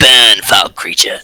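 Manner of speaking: put-on, wholly different monster creature voice. Voicing a creature attacking a player in the game: wholly different monster voice. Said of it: "that was a wholly different voice".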